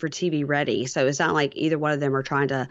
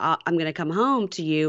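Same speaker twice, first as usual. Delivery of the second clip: plain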